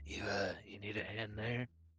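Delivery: soft whispered voice. Voicing a character who walks over to another and whispers: whispering in character. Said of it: "Slash will walk over to Ludwig and just kinda whisper".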